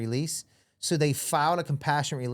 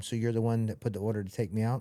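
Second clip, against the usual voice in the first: put-on whisper; 2 semitones lower than usual. Retelling confronting someone after pulling him in close: retelling a whisper. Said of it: "and I whisper to him".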